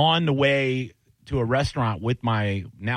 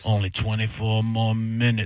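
put-on demon voice, much slower. Working a kitchen shift, counting down the minutes in an inner demon voice. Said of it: "I got my inner demon voice going".

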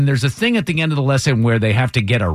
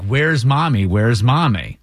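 mock crying, acted tearful calling out. Retelling a lesson, acting out someone looking around for mommy, imitating someone crying. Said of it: "looking around like crying".

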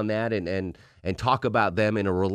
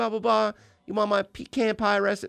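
put-on sweet, friendly voice, pitched higher; 12 semitones higher than usual. Recalling how Belinda answered calls when she screened them: imitating Belinda's sweet phone voice. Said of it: "she'd be like".

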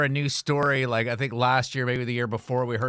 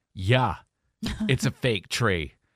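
openly proud, swooping tone. Showing how you answer people who judge your fake tree; saying it proudly. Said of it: "you say that proudly".

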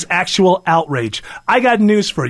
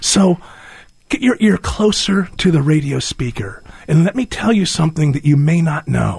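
whispered, much lower; 3 semitones lower than usual. Radio speaker asking listeners to lean closer to the speaker: whispering. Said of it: "I'm whispering because I learned somewhere".

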